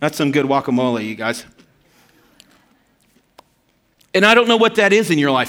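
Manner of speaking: talking with mouth full. Speaker talking to viewers while still chewing chips: talking with mouth full. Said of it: "I'm still chewing chips right here".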